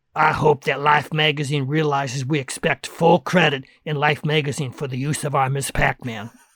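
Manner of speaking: put-on froggy, croaky old woman voice. Speaker retelling what the old lady who ran the bar said: froggy old lady voice. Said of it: "the little old lady who ran the bar with a froggy voice said".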